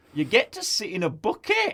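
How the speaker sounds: put-on Scouse chicken accent, laid on thick, high and swooping. Quoting a chicken character's line about the bucket, in a put-on Scouse chicken accent. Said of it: "in the most Scouser chicken accent".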